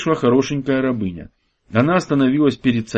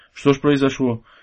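plain

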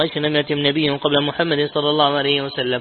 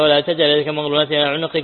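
normal talking voice

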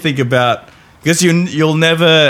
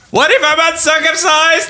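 shrill, very high, robotic, level monotone. During banter about a put-on voice, a speaker asks in a shrill robotic Dalek voice. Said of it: "it sounds so robotic and shrilly at the same time".

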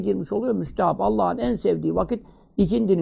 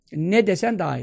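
ordinary talk, nothing marked

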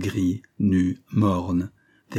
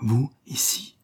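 murmuring; 4 semitones higher than usual. A recovering man recognizes the woman at his bedside, murmured.

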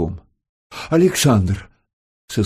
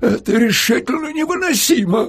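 trembling, quavering, high-pitched shouting cry. Narrator reads a man who has waited since morning protesting, shouting in a trembling voice. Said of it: "закричал тогда дрожащим голосом".

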